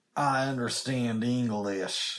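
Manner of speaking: put-on Southern US accent. Joking back about a review score, in an attempted Southern accent. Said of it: "that was my attempt at doing a Southern".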